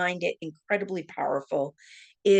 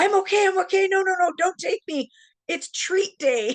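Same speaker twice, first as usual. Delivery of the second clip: put-on very high hollered yell; 14 semitones higher, 4 dB louder than usual. Retelling falling down the stairs and answering her husband: imitating her own yell. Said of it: "And I yelled".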